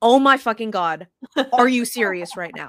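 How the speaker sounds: loud, blurted, shocked outburst of disbelief. Retelling reading a text message mid-conversation: retelling own yell. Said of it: "literally yelling".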